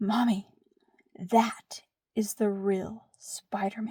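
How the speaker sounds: grave, secretive, dead serious little whisper. A mother retells what her son whispered to her, imitating a serious whisper. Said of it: "he whispers very seriously".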